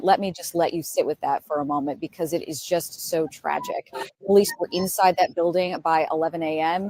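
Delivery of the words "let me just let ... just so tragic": ordinary talk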